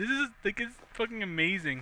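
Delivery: words broken up by laughter throughout. Playing a game and reacting with delight, laughing while talking. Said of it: "I can't stop laughing".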